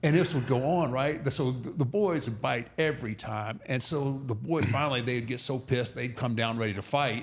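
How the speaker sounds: ordinary talk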